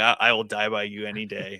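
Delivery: ordinary delivery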